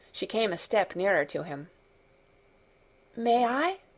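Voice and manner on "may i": small, trembling, tremulous, timid voice. Reading a story aloud, a frightened child asking permission: tremulous voice. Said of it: "she said tremulously".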